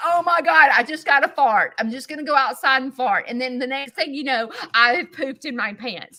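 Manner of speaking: play-acted, big, very animated, lively delivery. The speaker shows how they tell an embarrassing story, in a very animated retelling. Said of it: "I'm very animated".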